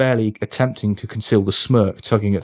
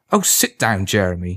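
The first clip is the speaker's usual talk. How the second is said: ordinary delivery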